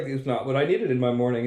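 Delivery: ordinary talk, nothing marked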